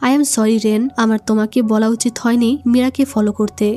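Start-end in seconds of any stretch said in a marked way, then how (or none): none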